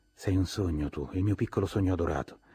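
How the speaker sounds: ordinary delivery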